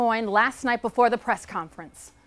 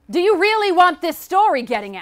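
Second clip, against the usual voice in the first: raised, pushy, insistent voice, pitched high; 7 semitones higher, 5 dB louder than usual. In a drama, pressing a reluctant source with a threat, in a raised voice. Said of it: "Lower your voice".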